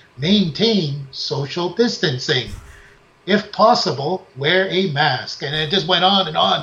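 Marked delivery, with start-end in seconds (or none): 0.2-5.4 automated robotic intercom announcement voice. Retelling an announcement that kept repeating, in a robot voice. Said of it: "it's like this robot voice".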